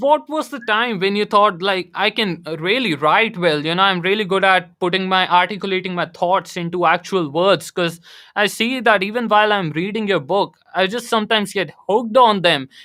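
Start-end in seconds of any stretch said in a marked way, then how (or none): none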